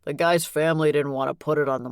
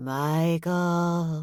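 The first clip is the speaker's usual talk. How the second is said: eerie, haunting, spooky ghost voice; 3 semitones higher than usual. Reading a story aloud, narrator pretending to be a ghost: spooky ghost voice. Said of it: "I said in my best spooky voice".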